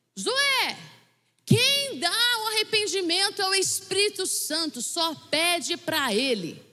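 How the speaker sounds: acted, high call as if from far off. Retelling how the speaker's mother called out from far away, retelling a shout from afar. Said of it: "gritou lá de longe".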